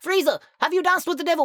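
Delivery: high-pitched villainous voice. Speaker asks himself a question in Frieza voice. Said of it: "Why am I asking myself in the Frieza voice?".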